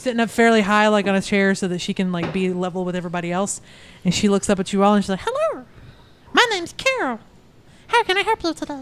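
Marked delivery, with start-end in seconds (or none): 5.2-8.7 very high, squeaky goblin voice. Narrator voicing a goblin character greeting everyone, Carol goblin voice. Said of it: "I'm not doing that voice the entire time".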